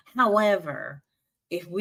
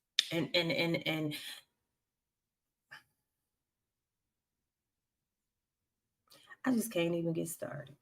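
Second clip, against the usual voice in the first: about to cry, quieter; 8 dB quieter than usual. Talking about fearing for a son when the news comes on: on the verge of tears. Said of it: "I'm about to start crying right now".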